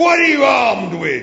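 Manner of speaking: very loud, very high, incredulous roaring bellow. A tank questions the little robot Marvin, roaring in disbelief. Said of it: "Roared the tank in disbelief".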